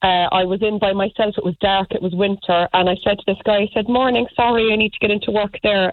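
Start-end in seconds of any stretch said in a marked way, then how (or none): 3.9-5.9 mock, excessively polite tone. Retelling asking a rude man to let them in to work: mock overly polite. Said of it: "trying to be overly polite".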